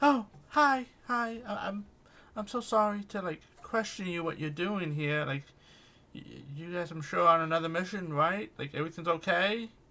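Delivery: very loud, nervous, stammering, stumbling delivery. Voicing Arlia, who has been pacing outside waiting: nervous character voice. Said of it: "Arlia ... She's like".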